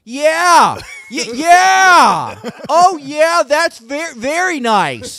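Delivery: very loud, very slow. Showing how one talks to old people: imitating talking loudly to them. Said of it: "you gotta be real loud, too".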